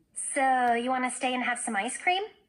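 plain reading voice

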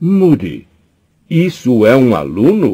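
high, drawn-out shouting, words stretched. A professor, her books falling from her arms, calls out to a colleague, shouting. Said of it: "Gritou a professora".

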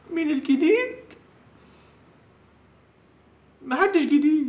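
speaking while weeping, tearful. Answering a woman's question in a scene, crying. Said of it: "وبتعيط ليه؟".

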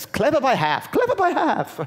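braying, very high, swooping put-on British accent. Retelling what a British woman said about the book, imitating her British accent. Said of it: "there was a British woman, I can't do the accent".

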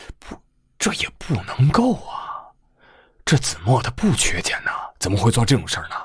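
quavering, shaken. A narrator reads a man's protest about his boss's son, in a trembling voice. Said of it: "颤声说道".

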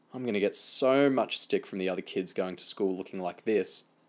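plain

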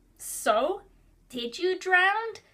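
put-on squeaky toddler voice, high and loud. Narrator reading a story, voicing three-year-old Justin asking a question, squeaky toddler voice. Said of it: "Justin asked in his squeaky toddler voice".

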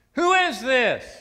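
mock fed-up tone, very high pitch, very loud. Telling a story where a man answers the same caller's ring again, acting out a frustrated man. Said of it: "totally frustrated".

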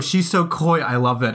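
ordinary talk, nothing marked

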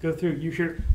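normal talking voice

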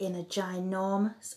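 ordinary delivery

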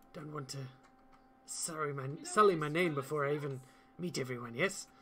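confiding, half-whispered delivery. A character speaks in a half-whisper to the players, worried about being watched, half-whispering. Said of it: "as Barra sort of whispers to you".

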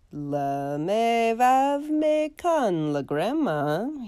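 slow, unsure sounding out. Put on the spot by his teacher, a student bluffs with French-sounding noises, uncertain. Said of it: "he said uncertainly".

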